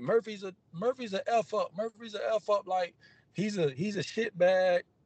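high, hushed, mocking, taunting voice.

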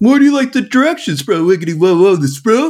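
high, loud, hyped-up goofy bro voice.

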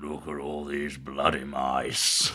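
deep, dropped, low actor voice. Asked for an impression, saying a silly line: Christopher Lee impression. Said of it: "Can you do a Christopher Lee impression?".

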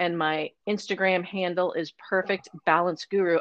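ordinary talk

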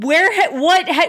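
loud, high, exasperated outburst.

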